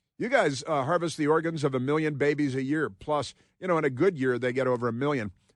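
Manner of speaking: ordinary delivery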